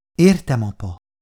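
ordinary delivery

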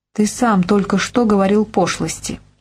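ordinary delivery

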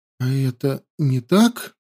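quavering, trembling, shaky voice. Ayuna asks Stanimir a question in a trembling voice. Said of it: "дрожащим голосом спросила Аюна".

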